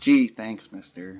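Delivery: loud, hollow, unconvincing, insincere tone. Retelling a kid's line after a competition, retelling an insincere thanks. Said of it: "And that sounded insincere".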